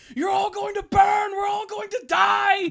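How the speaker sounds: frantic raging scream, very high and loud. Retelling an animated episode where captured Maul flips out: imitating Maul screaming. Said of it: "He just like starts screaming".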